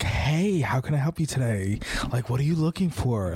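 over-the-top, over-animated salesperson voice. Retelling how sex shop counter staff greet customers: imitating an overly animated clerk. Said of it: "very, like, animated and very, like".

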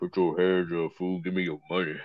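soft, low-key cartoon villain voice. Doing a voice on cue in a made-up robbery scene, Plankton voice. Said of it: "Try to do a Plankton".

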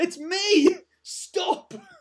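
imitated shouting. Retelling a film scene where the character yells to stop: imitating someone shouting. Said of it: "He was shouting".

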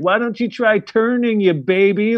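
mock very high, teasing taunting jeer. Retelling how a tough companion teased them on the mountain, mock-taunting. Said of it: "she just all like chirping me".

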